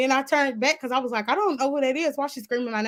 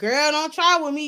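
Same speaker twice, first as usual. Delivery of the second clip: play-acted mouthy, attitude-filled, sassy tone; 3 semitones higher than usual. Retelling a girl's reply in a cafeteria: imitating a girl talking back. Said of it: "doing her little talk back".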